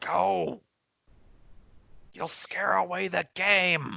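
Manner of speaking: creaky, scratchy, screeching spider creature voice. A spider shoos away a character who is backing off, in a scratchy, screechy voice. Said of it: "it says in its like scratchy, screechy voice".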